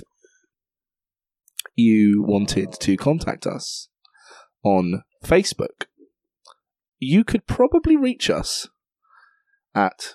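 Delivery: slow deliberate delivery. Giving the podcast contact details after being asked: saying it slowly. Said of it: "he's asked me to say it slowly".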